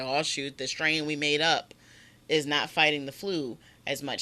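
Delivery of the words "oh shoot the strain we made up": usual speaking voice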